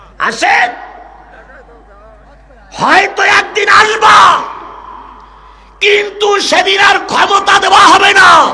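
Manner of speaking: high, loud shouting.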